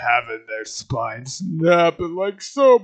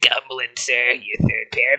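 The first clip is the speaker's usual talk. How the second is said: crusty character voice; 5 semitones lower than usual. Redoing a backstage line addressed to Gumblin, this time in a crusty voice. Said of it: "I should go for my more of a crusty type of".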